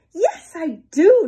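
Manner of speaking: high, loud, eager, thrilled reply. Nebraska answers a question from its friend, another state, excited. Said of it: "Nebraska said excitedly".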